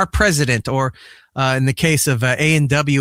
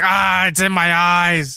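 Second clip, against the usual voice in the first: fake sobbing at a higher pitch; 4 semitones higher than usual. Joking about a man eating on camera: mock crying. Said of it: "He starts crying".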